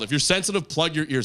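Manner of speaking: ordinary delivery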